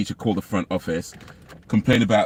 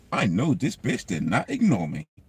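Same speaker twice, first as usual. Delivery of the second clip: swooping, put-on American accent. Retelling a student's remark about a teacher, in an american accent. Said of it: "that's my American accent".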